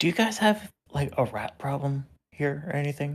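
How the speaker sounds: hushed whispering voice. Speaking in character to a waitress: whispering. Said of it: "gonna whisper to the waitress".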